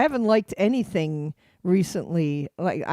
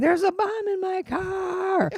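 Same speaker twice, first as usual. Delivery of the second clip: put-on yell, higher; 14 semitones higher than usual. Retelling a part of a band's performance where he's yelling: imitating someone yelling. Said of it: "this part where he's yelling".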